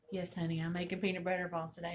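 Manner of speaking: ordinary talk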